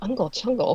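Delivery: hushed, soft half-whisper with no voice. Explaining an uncle's saying to the others: imitating Uncle Garrick half-whispering. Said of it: "he would just whisper".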